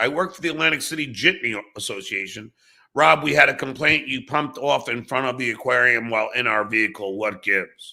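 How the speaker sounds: plain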